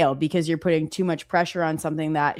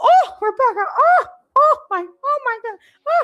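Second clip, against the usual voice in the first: put-on grandma voice, higher and louder; 6 dB louder than usual. Retelling how her grandma reacted on learning what the phrase meant: imitating her grandma. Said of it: "that's my grandma".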